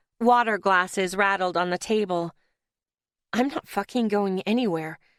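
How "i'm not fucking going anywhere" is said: hushed, biting, words bitten off under the breath. After Claire shouts, the narrator answers in a hushed, bitten-out voice. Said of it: "I bit out in a hushed voice".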